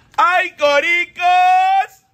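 high, loud, very slow, drawn-out vendor's call.

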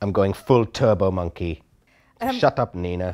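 put-on Jamaican accent. Improvising a role-play scene with another speaker, jamaican accent. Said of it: "I sound Jamaican".

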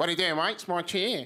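put-on drunk Australian man's accent. Retelling a drunk man in a Perth coffee shop claiming a chair, imitating a drunk Aussie guy. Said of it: "this really drunk Aussie guy".

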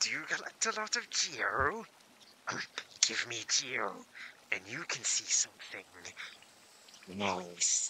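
silly put-on creature voice, Geo drawn out. Voicing a character's dialogue aloud while playing, in a put-on creature voice. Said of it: "doing that voice makes me feel so awful".

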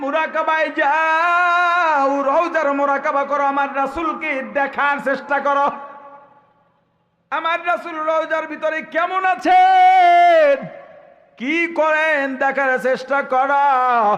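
high, loud, slow, commanding, emphatic delivery.

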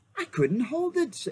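very high, breathless, gasped out. Narrator reads a character who has just let go of a spear, gasping. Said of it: "gasped Edmund".

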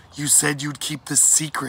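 menacing, threatening tone. Once the pirates are out of earshot, a mother adds: quiet but threatening. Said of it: "she added in a quiet but threatening voice".

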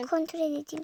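normal talking voice

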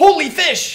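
very high, very loud, shrill yelling shout. Talking about a game with another speaker, the speaker suddenly shouts. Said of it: "I just shouted in that".

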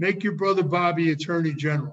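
ordinary talk, nothing marked

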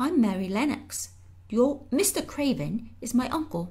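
half-whispered, slightly high. Mary answers a boy who asked if she is a ghost, half-whispering back. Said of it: "Mary whispered back".

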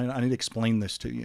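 put-on stern tone. Retelling standing up in front of the whole church: retelling a stern statement. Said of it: "I said it kinda sternly".

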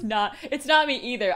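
high, loud speech breaking up with laughter. Answering the other speaker's joke about crying: laughing while talking. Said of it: "I'm laughing".

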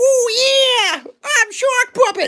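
"oh" stretched out, high and loud. Playing with a puppet while baking donut muffins: Shark Puppet voice. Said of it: "Should we do Shark Puppet?".

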